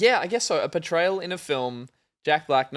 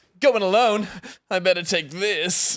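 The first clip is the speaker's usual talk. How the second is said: drawn-out, anime-style voice; 4 semitones higher than usual. Quoting a predicted movie line seen in social media videos: anime TikTok voice. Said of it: "Did you do the anime TikTok voice just then?".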